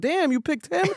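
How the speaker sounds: mock heated, angry voice. Retelling a show uncle's jealous outburst: imitating someone getting heated. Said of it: "he was heated".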